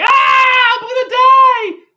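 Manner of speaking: shrill, high, loud, very slow drawn-out scream. Telling how a horse took off with them, retelling their own scream. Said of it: "And I was like screaming".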